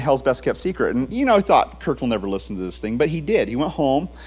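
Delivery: ordinary talk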